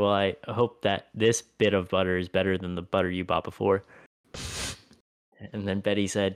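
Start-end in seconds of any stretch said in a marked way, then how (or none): none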